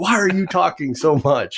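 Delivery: shrill, very high-pitched scolding yell. Retelling relistening to an old podcast episode: imitating yelling at past self. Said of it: "yelling at my, my past self".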